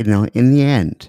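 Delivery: low, soft public-radio announcer voice. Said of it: "Use your N P R voice".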